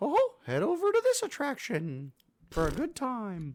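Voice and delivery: very high, swooping, slow, drawn-out toy voice. Explaining the toy's tips to first-time visitors, My Pal Mickey voice. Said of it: "it'd be like".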